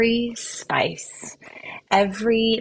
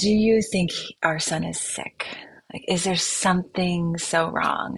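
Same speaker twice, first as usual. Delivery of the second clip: put-on whispered delivery. Retelling asking her husband in bed if their son is sick: imitating own whisper. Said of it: "I whispered it".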